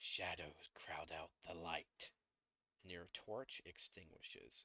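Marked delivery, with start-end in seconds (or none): 0.0-2.1 hissing, hissed whisper. Voicing an unseen speaker in a dark passage: hissing whisper. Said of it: "you hear a hissing whisper".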